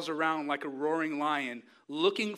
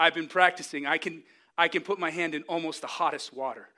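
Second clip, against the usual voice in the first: ordinary talk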